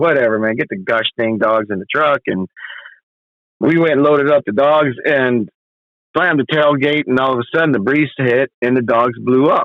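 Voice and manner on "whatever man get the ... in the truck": ordinary delivery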